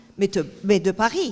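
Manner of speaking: usual speaking voice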